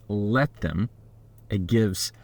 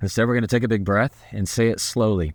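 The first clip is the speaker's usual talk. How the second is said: normal talking voice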